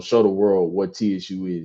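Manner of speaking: ordinary talk, nothing marked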